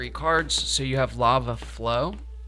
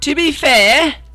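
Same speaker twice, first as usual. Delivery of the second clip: put-on British accent, very high-pitched and very loud; 14 dB louder than usual. Quoting a phrase only British people say, in imitated British accent. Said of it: "something that I only hear British people say. They'll be like".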